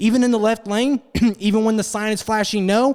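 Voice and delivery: play-acted, high, needling, mocking, taunting protest. Retelling an argument with a driver at a light: retelling own mocking tone. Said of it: "making fun of him".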